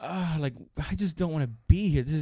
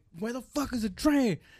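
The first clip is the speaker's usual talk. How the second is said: restrained high half-yell, mild; 6 semitones higher than usual. Recounting a man waiting for a train, the speaker imitates him yelling. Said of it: "the guy that's going".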